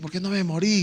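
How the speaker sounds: put-on euphoric, joyful yell. Retelling a shout after surviving a car crash: retelling own euphoric shout. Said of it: "grité eufóricamente".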